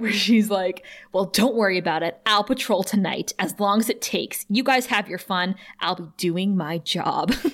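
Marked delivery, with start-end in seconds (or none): 1.1-7.3 earnest, heroic voice. Retelling a TV scene where one character mimics another, do Buffy's hero voice. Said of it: "launches into Buffy's hero voice".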